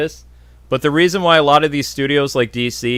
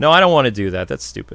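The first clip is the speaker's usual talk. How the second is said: ordinary talk, nothing marked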